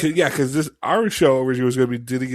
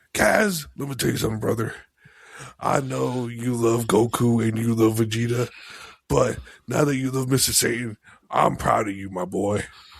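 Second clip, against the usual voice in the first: proud mentor character voice. Imagining the character speaking to Kaz, in a Mister Satan voice. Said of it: "I want Mister Satan to tell me he's proud of me".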